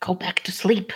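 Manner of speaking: hushed whisper-growl under the breath. Sitting against a tree at the camp's edge, telling a companion to sleep: whisper growl. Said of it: "he just like whisper growls at Violine".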